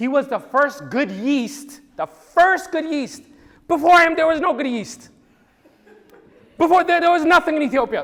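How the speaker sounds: moved, emotional, very loud, high-pitched outpouring. Recounting a history, the speaker is getting emotional. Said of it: "So sorry, I'm getting emotional".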